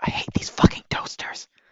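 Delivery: hushed, quiet whisper under the breath. In a game scene, leaning over to another character, whispering. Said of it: "bees and i whisper".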